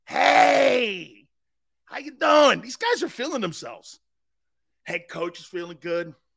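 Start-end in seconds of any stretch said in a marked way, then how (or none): 0.2-2.7 put-on loud, swooping South Philly accent. Imitating a radio caller from south philly: south philly caller impression. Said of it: "Joey from South Philly".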